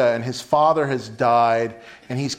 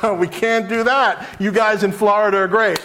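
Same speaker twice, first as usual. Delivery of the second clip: pitched-up, chuckling, dismissive delivery; 7 semitones higher than usual. Retelling how he answered a man in his crowd yelling, a laughing reply. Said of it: "he laughs at it and kind of is like".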